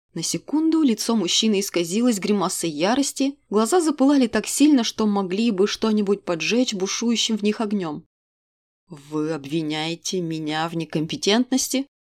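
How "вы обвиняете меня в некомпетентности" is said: cold, icy, low hissing voice. Narrator reads the man replying to the woman's remark, in an icy hissing tone. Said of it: "ледяным тоном, с шипением переспросил он".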